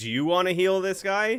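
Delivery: loud shouting. Calling back to the Goliaths some distance away, shouting. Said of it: "I'm shouting".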